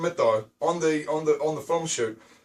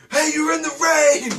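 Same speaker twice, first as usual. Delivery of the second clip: mock heckling tone, higher and louder; 11 semitones higher, 6 dB louder than usual. Retelling heckling a busker with another man: imitating heckling. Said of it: "start heckling the guy".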